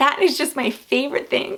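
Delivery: emotional, choked-up voice on the verge of tears. Talking about watching her play ice hockey, getting choked up. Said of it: "I don't know why I'm tearing up".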